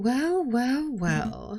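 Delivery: patronizing, talking-down tone. Someone greets two would-be prison escapees who failed, condescending. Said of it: "that condescending tone".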